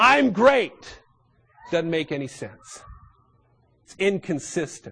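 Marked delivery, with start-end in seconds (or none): 0.0-1.0 loud, high pitched boastful yell. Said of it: "standing before the Grand Canyon and yelling out".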